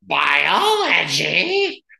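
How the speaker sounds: rough, creaky, swooping, sing-song nun voice. Retelling how a teacher came in to scare athletes, imitating Sister Anita's voice. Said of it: "she had to talk like this".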